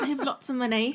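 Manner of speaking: put-on British accent. Asked to say it in a British accent, speaker tries one: British accent. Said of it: "said that in a British accent".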